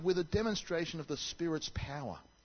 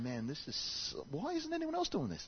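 puffed-up, self-important, proud-as-punch tone; 2 semitones higher, 4 dB quieter than usual. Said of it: "I got puffed up and I'm going".

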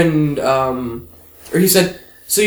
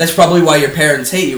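mock-playful, teasing tone. Speaker retells what a girl on the bus said to them, mock-playful jab. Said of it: "she said something playfully".

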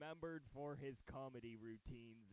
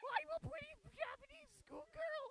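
put-on very high, raised girlish schoolgirl voice; 5 dB louder than usual. Imitating how another speaker sounds in their head: high-pitched schoolgirl voice. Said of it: "you sound like".

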